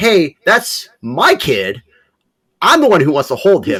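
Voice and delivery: annoyed drawn-out complaint. Retelling an annoyed remark from own past as a dad: imitating own annoyed past self. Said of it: "I got fucking annoyed".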